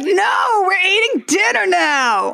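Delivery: put-on raging beast, high, drawn-out screaming. Retelling a cartoon scene, quoting the beast: imitating the beast screaming. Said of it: "the beast enters and just starts screaming".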